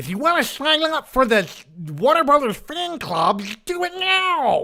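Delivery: squeezed up high and loud. Recalling a fan club commercial on a VHS tape; Daffy Duck impression. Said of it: "That was my Daffy Duck impression".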